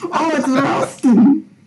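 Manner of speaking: put-on Glasgow accent. Asked for their best glaswegian impression, trying a glaswegian accent. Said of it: "give us your best Glaswegian impression".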